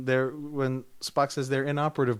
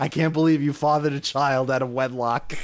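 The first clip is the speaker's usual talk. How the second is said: mock dripping sarcastic tone; 4 dB louder than usual. Retelling how a line in a film was delivered: imitating dripping sarcasm. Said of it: "It's just dripping with sarcasm".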